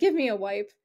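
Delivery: grossed-out, squeamish, disgusted, curt tone. Retelling a character's reaction after a handshake, imitating a disgusted character. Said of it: "disgusted look on her face".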